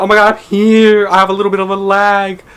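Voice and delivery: flustered, freaked-out, panicked, scrambling blurt. Retelling hearing own name on a stream: imitating own freaked-out reaction. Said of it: "I freaked out".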